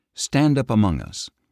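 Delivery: ordinary delivery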